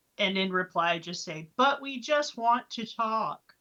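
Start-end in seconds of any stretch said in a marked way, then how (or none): 1.6-3.3 enchanted, pleading voice. Speaking in character to an unseen voice: booming, much louder than normal. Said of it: "use thaumaturgy on my voice to make it boom".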